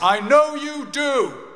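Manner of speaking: loud, very high voice. As the speaker leaves the hospital ward, his dad calls after him, retelling dad's loud voice. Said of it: "in a loud voice".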